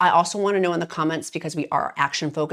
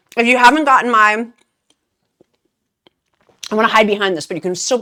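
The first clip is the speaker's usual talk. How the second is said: mouth full, higher and louder; 5 semitones higher, 8 dB louder than usual. Eating on camera while telling viewers about a meal plan, talking with mouth full. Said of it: "my mouth's full".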